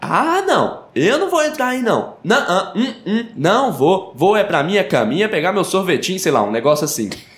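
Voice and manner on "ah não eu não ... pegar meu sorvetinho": high comic-strip voice with pitch swooping up and around. Imitating a comic character refusing to enter the forest: Cascão voice. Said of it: "pensando nele com aquela voz dele inimitável".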